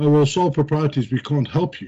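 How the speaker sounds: ordinary delivery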